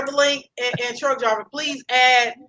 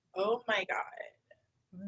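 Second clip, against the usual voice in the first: put-on very hushed, soft Valley Girl way of talking; 4 semitones lower, 14 dB quieter than usual. Giving a clue in a guessing game: valley girl way of talking. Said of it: "they say this is a specific way they talk".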